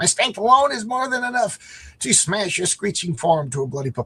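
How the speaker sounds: put-on dinosaur voice. Speaker acting out a scene, voicing the dinosaur in a dinosaur voice. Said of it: "That's my dinosaur voice".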